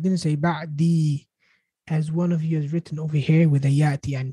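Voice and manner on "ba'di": lengthened final vowel, drawn out, lower pitch. Speaking to the class, showing a wrong written form with stretched final vowel. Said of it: "I didn't make it long".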